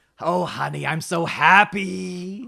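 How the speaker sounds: raspy, very slow, drawn-out, happy delivery. Imitating an actor after describing his very raspy voice: raspy Harvey Fierstein voice. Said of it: "He's got that very raspy voice".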